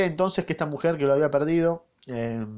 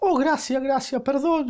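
very high, imploring, pleading cry; 12 semitones higher than usual. The wretched woman falls to her knees, exclaiming. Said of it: "exclamó la miserable cayendo de rodillas".

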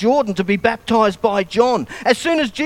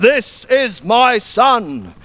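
booming megaphone-like, commanding, lion-like proclaiming voice. Speaker retelling the voice from heaven: God's voice like a megaphone. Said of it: "like a megaphone voice".

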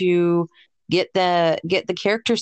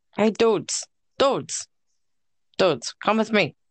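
cartoonish put-on game-character voice. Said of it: "That was my Seuss impression".

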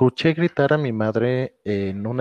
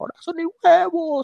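play-acted very high, shrill yelling. Describing how the speaker's mother yells, imitating mother yelling. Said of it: "mi madre gritando así".

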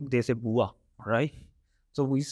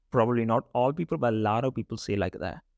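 usual speaking voice

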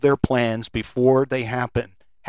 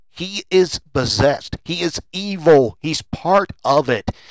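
usual speaking voice

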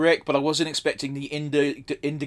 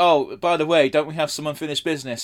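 mock sugary, cute, adorable sweet delivery. Retelling a game character's line: imitating a sweet, adorable tone. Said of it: "sweet and adorable and like".

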